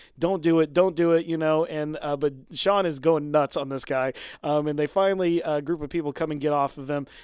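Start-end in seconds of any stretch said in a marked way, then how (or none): none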